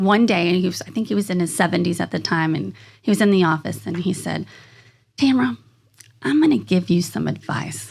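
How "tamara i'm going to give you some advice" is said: put-on down-home country accent. Retelling advice an older man gave in the office: imitating a country accent. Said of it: "he's got that country accent".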